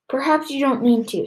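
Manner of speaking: grim, serious, heavy tone. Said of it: "she said grimly".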